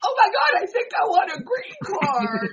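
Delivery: high, loud excited cry, blurted out.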